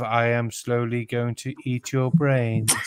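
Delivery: level, expressionless, flat droning monotone. Mocking a boring online voice: imitating a monotone voice. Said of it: "that monotone voice of".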